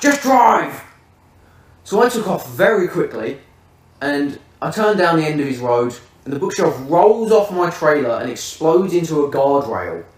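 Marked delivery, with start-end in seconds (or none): 0.0-0.8 mock shouting, pitched up. Retelling what he shouted from the car: imitating someone shouting. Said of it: "And he shouts".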